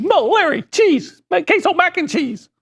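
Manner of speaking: very high-pitched slapstick stooge voice. Imagining what the Three Stooges would order: Curly voice. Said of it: "Curly would go".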